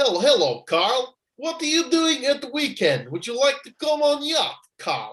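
high, fake, put-on Russian accent. Act out Roman Abramovich ringing Carl, in a Borat voice. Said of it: "He's turned into Borat".

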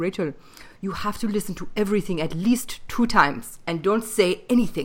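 put-on German accent. Retelling what a teacher with a German accent told her: imitating a German accent. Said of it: "he had this German accent".

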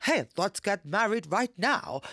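loud, put-on American accent. Quoting people in american movies, in a put-on american accent. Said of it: "That's my American accent".

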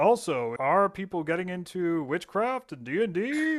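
goofy mock news teaser, slightly shifted voice.

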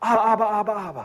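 put-on toddler babble. Speaker imitating what a toddler says on seeing their father, baby talk. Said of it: "This is baby talk".

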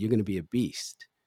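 quiet, under-the-breath half-whispered aside. Retelling words someone said under his breath: imitating a half-whisper. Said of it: "under his breath, he whispered this".

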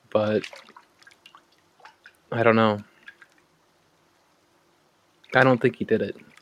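speaking in a hushed voice. A character asked how he is doing emotionally answers about the man who raised him, in a hushed tone. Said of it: "and he'll say in a hushed tone".

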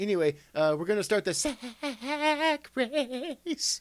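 very high-pitched voice, very slow and drawn out. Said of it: "it made you talk like [name]".

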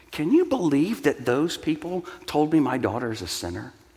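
stunned, incredulous, can-you-believe-it disbelief. Retelling what a churchgoer said to him: imitating an incredulous voice. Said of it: "with incredulity in her voice".

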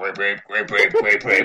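low cartoon gorilla character voice. Imitating a cartoon gorilla who just walks around: Grape Ape voice. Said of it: "He just walked around".

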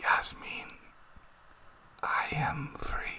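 very slow, drawn-out whisper. Retelling a movie character's last line: imitating a whisper. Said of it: "like a whisper".

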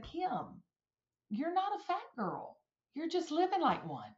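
mock very calm, soft voice with swooping pitch. Speaker retells a man's reply to her pity party: imitating someone speaking calmly. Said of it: "very calmly said".

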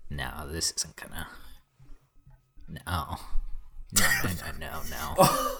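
slow, appalled, horrified tone. Reacting to a comic book theory someone just explained: horrified. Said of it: "You sound horrified".

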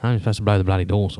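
usual speaking voice

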